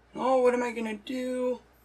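high, fake sobbing crying voice. Retelling a viral video with a pregnancy test: imitating someone fake crying. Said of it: "Acting like she's crying".

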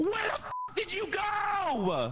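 high, slow, furious, angry yell.

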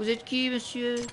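put-on high childlike voice.

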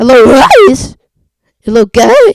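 deliberate voice crack. Trying to make the voice crack on purpose: forced voice crack. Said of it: "I can't voice crack on purpose".

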